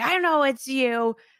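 loud, drawn-out yell. Retelling the end of a game: imitating players yelling at each other. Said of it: "are just yelling at each other like".

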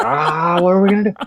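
very high-pitched, frantic, panicked fluster. Retelling being stuck on a phone call that won't work, imitating own freaking out. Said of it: "in this vortex of freaking out".

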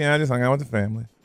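acted bored monotone, flat, unexcited, rattled off. Teasing someone about their weekend by echoing them, mock-flat unexcited delivery. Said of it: "You didn't sound like you did anything exciting. Kind of like".

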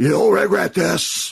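put-on, very high, top-of-the-lungs screaming yell. Describing a late Pacino movie scene: imitating Pacino screaming. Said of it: "just screaming at the top of his lungs".

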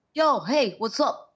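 put-on strong, laid-back New York accent, slow and high-pitched. Imitating how an actor met in New York talks: imitating Matthew Modine's New York voice. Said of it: "this is how he talks in real life".

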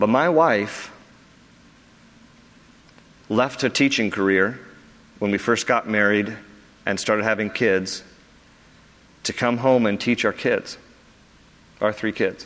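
emotional, voice catching. Praising his wife's sacrifice for their kids, getting choked up. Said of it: "I'm trying not to get choked up".

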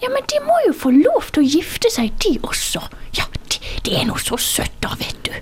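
put-on broad, breathy, half-whispered elderly Bergen dialect. Retelling how seventy-year-old women discussed marriage at lunch: old lady Bergen accent. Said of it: "På sånn skikkelig gammel dame bergensk".

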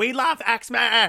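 play-acted loud, high shouted cheer. Retelling what the people in the next seats yelled at a star: imitating a loud shout. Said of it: "shout at him really loud".

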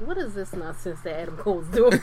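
ordinary delivery

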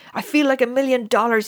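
very loud, high-pitched, exclaiming cry. Will, with a roaring temperature, bursts through the bedroom door: crying out. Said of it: "he cried".

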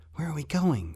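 high-pitched whisper. Narrator voicing Rat, hiding in an alley with John, whispering. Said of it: "Rat whispered".

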